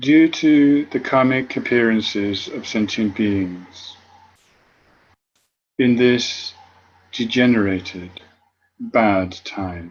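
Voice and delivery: read quite slowly with long pauses between phrases.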